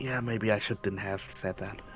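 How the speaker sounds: hushed whisper. A character whispers back to another who just whispered to her, whispering. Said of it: "just whisper back".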